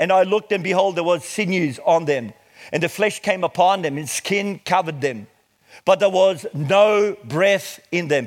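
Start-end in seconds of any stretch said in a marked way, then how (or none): 5.8-8.3 slow, heavy stress on "no breath". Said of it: "Please underline that".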